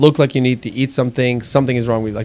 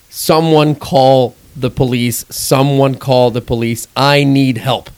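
ordinary talk, nothing marked

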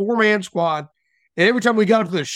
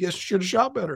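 put-on nonchalant, mock-casual tone, much quieter; 7 dB quieter than usual. Retelling a shooting contest, the speaker quotes the other shooter, retelling a nonchalant remark. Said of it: "Matt just nonchalantly goes".

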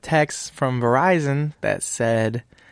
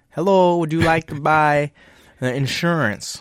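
put-on odd, unusual Jamaican accent; 4 semitones higher, 3 dB louder than usual. Retelling an insurance caller's pitch, in an odd, non-normal Jamaican accent. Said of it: "I'm not doing a normal Jamaican accent".

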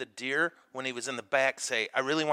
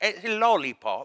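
put-on English accent, high and loud; 6 semitones higher, 6 dB louder than usual. Explaining you now have to say 'hey, lollipop' this way: English accent. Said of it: "You have to say it with an English accent".

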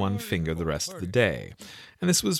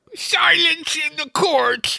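very loud, very high-pitched, shrill ringing cry; 8 dB louder than usual.

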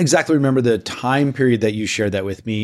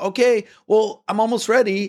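very high, drawn-out shout; 10 semitones higher than usual. Retelling answering someone calling up from downstairs, retelling yelling back. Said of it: "And I'm yelling back".

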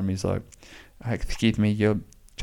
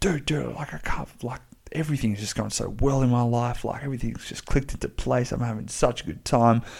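all-excited, over-the-moon gushing ramble; 4 semitones higher than usual. Quoting what he said one day last week, acting out someone all excited. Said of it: "He's all excited".

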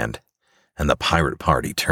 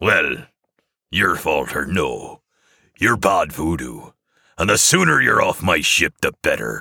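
growling voice; 3 semitones higher than usual. Captain Crimson answering the Witch Doctor about his ship, growling. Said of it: "growls Captain Crimson in return".

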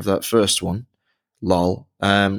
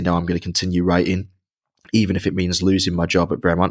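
ordinary talk

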